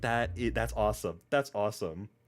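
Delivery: normal talking voice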